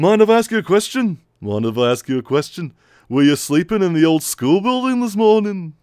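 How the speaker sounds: put-on heavy, blended Liverpool rock-star accent. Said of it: "my hybrid [name] and [name]".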